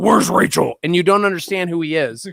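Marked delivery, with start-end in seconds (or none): 0.0-0.7 muffled, as if mouth full of marbles. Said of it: "marbles in his mouth and is like".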